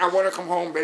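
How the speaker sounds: play-acted sobbing, crying, blubbering through words. Retelling a movie scene where the soldier cries at a bar: imitating Chris Kyle crying. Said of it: "there's snot coming out his nose".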